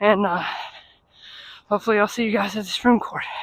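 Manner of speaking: heavy breathing while talking. Hurrying on foot to reach the Supreme Court, heavy breathing while talking. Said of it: "Sorry for the heavy breathing".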